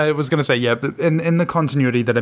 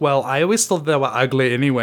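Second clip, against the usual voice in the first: ordinary talk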